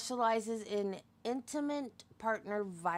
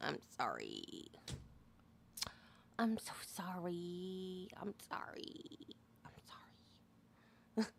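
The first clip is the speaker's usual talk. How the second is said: put-on hushed, nasal Valley Girl whisper, heavy vocal fry; 4 semitones lower, 11 dB quieter than usual. Showing how a valley girl says it, nasal with vocal fry. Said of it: "through your nose with a lot of vocal fry".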